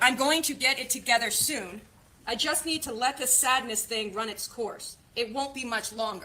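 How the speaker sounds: ordinary delivery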